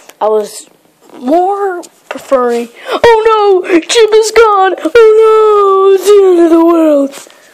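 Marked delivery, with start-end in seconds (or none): 2.9-7.3 very high, loud blubbering worried wail, "oh" stretched. Voicing Bowser reacting to a friend being gone: put-on Bowser crying voice. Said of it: "Bowser's, um, crying or worry voice".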